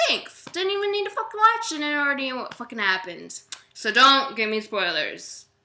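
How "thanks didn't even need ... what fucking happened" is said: high, fast, sarcastic, annoyed rant. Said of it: "And I'm like".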